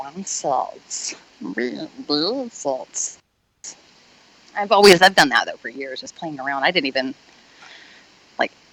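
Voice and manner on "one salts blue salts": very slow, whispered creeping voice, every word dragged. Offering to do the character, the speaker performs a Gollum voice. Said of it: "I'll do the um the Gollum or what's Smeagol".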